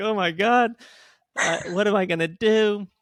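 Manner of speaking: mock, high-pitched, tearful talking through tears. Retelling a moment when a little kid smiled at him: imitating own past crying. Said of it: "crying and like".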